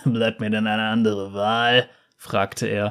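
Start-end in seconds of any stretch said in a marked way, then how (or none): 0.0-1.9 grim, humourless delivery. Seiglos answers the one telling him to come along, after a grim laugh, grim. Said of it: "Seiglos lachte grimmig".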